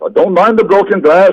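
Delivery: high, terrible put-on Irish accent. Retelling what Fitzroy said after he came in, Fitzroy's terrible Irish accent. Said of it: "That was an Irish accent".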